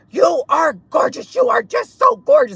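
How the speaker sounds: very high hollering, pitch climbing upward. Retelling a man in a truck calling out compliments: imitating a man yelling. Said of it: "yelling it".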